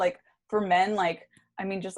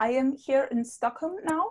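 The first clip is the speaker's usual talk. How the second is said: shaky, slow, high attempt at a Swedish accent; 6 semitones higher than usual. Trying out a joke sketch idea: attempted Swedish accent. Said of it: "can't do Sweden".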